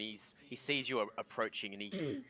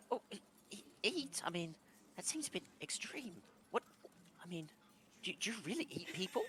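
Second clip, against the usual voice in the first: put-on shocked little boy voice, higher, quieter; 9 semitones higher, 4 dB quieter than usual. Voicing a little boy startled to hear about eating people: voicing a startled little boy. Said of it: "You see his eyes go wide".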